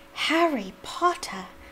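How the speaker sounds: high-pitched creature voice. Narrator reads the creature greeting Harry Potter, in a high-pitched Dobby voice. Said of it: "said the creature in a high-pitched voice".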